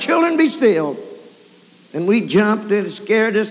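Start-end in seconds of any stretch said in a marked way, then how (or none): 0.0-1.0 mock cry, toned down, mild and high-pitched. Retelling a mother interrupting the children at dinner: imitating a scream. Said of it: "my mother screamed out".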